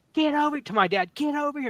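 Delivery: put-on, shrill, very high screaming. Retelling a mom screaming when a small dog attacked: imitating a mom screaming. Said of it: "my mom starts screaming".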